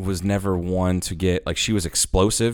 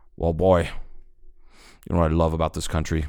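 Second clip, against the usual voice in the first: unhurried, lingering, slow delivery with every word drawn out; 3 semitones lower than usual. Retelling a favorite movie scene, quoting the villain: imitating Bill the Butcher. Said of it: "he goes".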